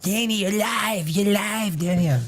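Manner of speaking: hushed, soft little cartoon kid voice. A host reminding Danny that they are live, Eric Cartman voice. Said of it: "get that little Cartman, Eric Cartman voice".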